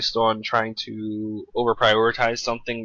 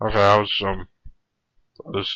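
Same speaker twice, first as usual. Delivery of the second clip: speaking while chewing, mouth full of food; 2 semitones lower than usual. During a call check, speaking while eating a pretzel, talking with mouth full. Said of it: "sound like you have something in your mouth".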